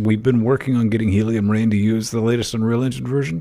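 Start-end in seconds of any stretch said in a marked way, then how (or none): none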